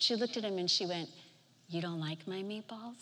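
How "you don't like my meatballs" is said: put-on soft, hushed grandma voice. Retelling how a grandmother reacted when her grandson refused another meatball, imitating her changed tone. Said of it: "And her tone changed".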